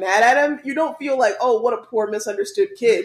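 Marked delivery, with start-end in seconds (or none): none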